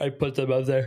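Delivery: yawning while talking. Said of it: "sorry, I'm yawning".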